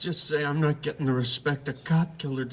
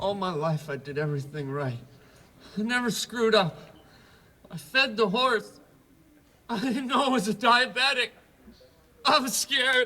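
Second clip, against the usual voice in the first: high, tearful crying through the words; 5 semitones higher than usual. In a scene, [name] answers friends who say they'll get him out, crying. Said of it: "stop crying".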